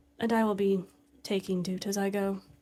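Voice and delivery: flat lifeless voice. Voicing a character leaving the shop, in a dead voice. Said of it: "really funny to say in his dead voice".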